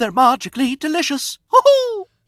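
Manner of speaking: very high and loud, swooping. A voice actor, asked about past roles, demonstrates the Lucky the Leprechaun voice. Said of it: "one of the voices of Lucky the Leprechaun".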